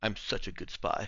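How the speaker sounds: whispered, hushed mutter under the breath. Player speaking as their character at the end of the session: muttered under breath. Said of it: "under her breath".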